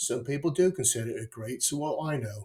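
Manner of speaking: put-on quiet, weak, poorly done East London accent. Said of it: "that was a pretty shit East London accent".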